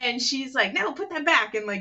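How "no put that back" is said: put-on, high-pitched, scolding mom yell. Retelling a dubbed film scene, the mother scolds her son; retelling a mother yelling. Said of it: "yelled at him".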